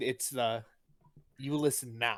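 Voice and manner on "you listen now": put-on harsh stern tone, lower and quieter. Retelling how a kid was told to listen: imitating a stern unfriendly order. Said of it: "It wasn't the, "I'm trying to be your friend."".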